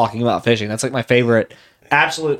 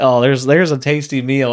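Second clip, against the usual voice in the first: ordinary delivery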